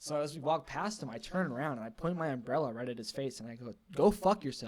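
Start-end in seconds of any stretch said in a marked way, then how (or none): 3.9-4.7 loud, really aggressive, scolding tone. Retelling pointing an umbrella at a man's face: retelling an aggressive line. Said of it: "really, like, aggressively".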